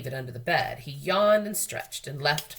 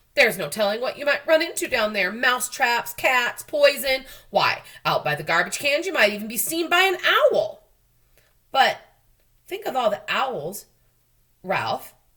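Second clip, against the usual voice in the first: frightened, fretful, fussing mother mouse voice; 7 semitones higher, 6 dB louder than usual. Reading a story, the narrator voices Ralph's mother warning him: frightened, fussing mother mouse. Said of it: "growled his frightened mother. / She was always too busy fussing and worrying. / growled his frightened mother. / She was always too busy fussing and worrying".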